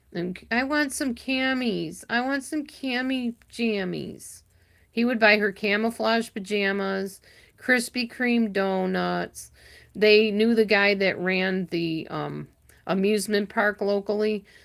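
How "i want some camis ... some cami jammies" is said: put-on high, whiny little girl baby talk. Imitating Charlie whining to her husband, in little girl baby talk. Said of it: "in this little girl voice and like I mean baby talk".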